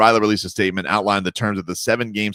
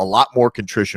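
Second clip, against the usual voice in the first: ordinary delivery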